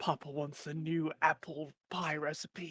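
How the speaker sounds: soft, in-character half-whisper. Voicing a character picking a lock: half-whispering in character. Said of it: "in a whisper, he'll be like".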